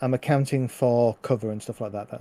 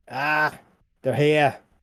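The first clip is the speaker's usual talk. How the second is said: hobgoblin creature voice crying out; 3 semitones higher than usual. A game master voices a hobgoblin attacking the players, yelling in goblin. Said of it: "the hobgoblin, yells in goblin".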